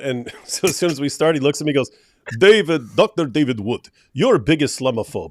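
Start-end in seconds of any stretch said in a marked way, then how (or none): 2.4-5.3 put-on Russian accent. Retelling what another man said to him, in a Russian accent. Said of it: "speaking in the Russian accent".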